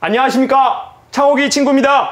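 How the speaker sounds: loud, high, big-voiced mock formal politeness. Retelling how a friend greeted the speaker's silent father: loud formal greeting. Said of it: "큰 소리로 이렇게 얘기했습니다".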